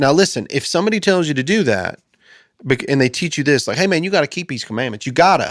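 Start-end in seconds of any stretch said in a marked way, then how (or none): 3.8-5.5 mock Southern accent. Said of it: "this is gonna sound Southern and hick".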